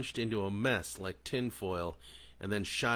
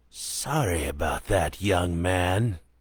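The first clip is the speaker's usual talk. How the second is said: very loud, hissed creature voice; 3 semitones lower, 8 dB louder than usual. A creature on its perch above the stalls speaks down to him, hissing. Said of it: "it hissed from above".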